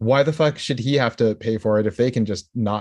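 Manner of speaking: ordinary talk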